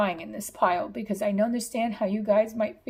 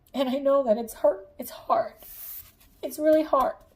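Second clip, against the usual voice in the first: tearful, spoken through tears; 4 semitones higher than usual. Reading a pile message to viewers: crying while speaking. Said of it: "the reason why I'm crying".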